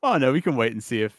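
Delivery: ordinary delivery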